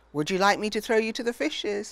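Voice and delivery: playful, teasing tone. A father swings his daughter Ajiba round and round, teasing. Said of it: "her father teased".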